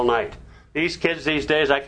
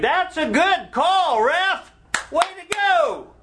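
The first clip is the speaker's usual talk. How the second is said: acted, sincere, high, drawn-out, far-carrying shout; 14 semitones higher than usual. Recalling games with the boys, the speaker retells shouting across the field to the ref. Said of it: "you could hear me across the field saying".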